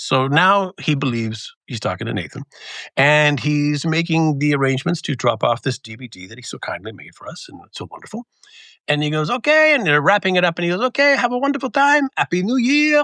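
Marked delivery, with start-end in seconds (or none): 10.8-13.0 very high-pitched, put-on French accent. Retelling a phone caller's goodbye, imitating a french accent. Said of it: "his French accent".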